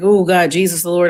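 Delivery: ordinary talk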